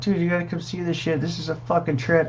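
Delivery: yelling. Retelling calling someone over to come see it: retelling a yell. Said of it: "I'm all yelling for my girl".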